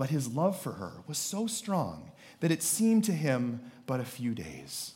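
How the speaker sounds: soft, swooping, syrupy sappy romantic voice. Reading aloud from Bible chapter 29 to the audience, in a sappy romance-novel voice. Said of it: "you have to read it in this voice".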